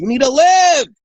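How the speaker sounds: loud, very high-pitched yell. Voicing the universe yelling inside your soul: yelling. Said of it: "then it yells inside of your soul and goes".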